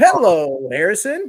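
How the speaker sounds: high, very loud, belted animated-movie hero voice. Retelling how someone greeted a young son at a wedding: Emmet voice from The Lego Movie. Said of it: "goes right into, uh, Emmett's voice from the Lego movie".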